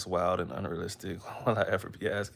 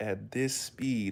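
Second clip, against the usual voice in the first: very slow, deliberate, each word stretched out; 3 semitones higher than usual. Showing how slowly they had to talk to a therapist: speaking very slowly. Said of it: "I would have to say it really, really slow".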